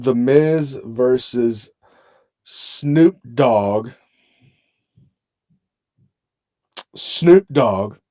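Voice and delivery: very slow, deliberate, each word laid out. Naming a match so everybody can understand: saying it slowly. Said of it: "I'm gonna say this slowly".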